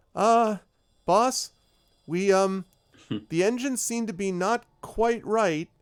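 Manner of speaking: squeaky, very high-pitched, very loud voice. Voicing a crew member reporting engine trouble to the boss: high-pitched voice. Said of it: "high-pitched voice".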